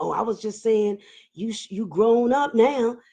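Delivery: mimicked whisper. Retelling what a man at a funeral whispered in their ear: imitating someone whispering. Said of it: "And he whispered".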